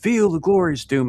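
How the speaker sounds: shrill top-of-the-lungs yell, very high. Retelling charging in during a game in a crowded room: imitating own past yell. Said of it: "at, like, the top of my lungs".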